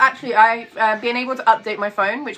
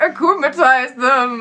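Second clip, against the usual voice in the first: mocking character voice, making fun; 2 semitones higher, 3 dB louder than usual. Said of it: "I've been making fun every time".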